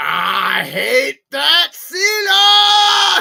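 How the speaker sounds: very loud, very high, slow cartoon-villain rasp, word stretched. Joking about what a wrestler might say, Sonic the Hedgehog villain reference. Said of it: "That was a Sonic the Hedgehog reference".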